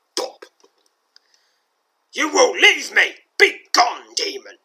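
put-on furious old man's yell, very high, shrill, very loud. Narrating a story, voicing an old man's line as an angry shout. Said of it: "shouts the angry voice of the old man".

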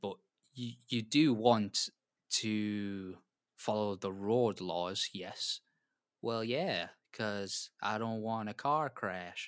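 fake American accent with drawn-out vowels. In conversation, putting on an American accent. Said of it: "Sorry for the accent".

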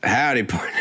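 put-on Western cowboy accent. Guessing what accent he'll have, greeting in a western accent. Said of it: "You think they'd do a Western accent?".

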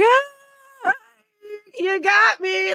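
play-acted, very high, slow, forced nervous "ah". Pretending it had been a joke, the speaker retells a nervous hyena laugh. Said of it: "nervous laugh like a hyena".

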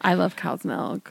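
all-sexy, sultry, creaky ASMR delivery. Telling another speaker how much you like dairy: sexy ASMR voice. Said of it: "she got all sexy with".

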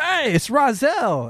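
high-pitched Italian dude voice. Retelling a shirtless guy on the street calling out: imitating a Guido guy. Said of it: "Italian dude".

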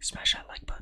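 soft, breathy, whispered delivery. Taking turns trying out call-to-action lines: whispery.

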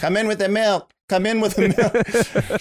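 put-on high little baby voice. A parent shows how they voice their baby daughter, baby daughter voice. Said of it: "I just kind of like do her voice".

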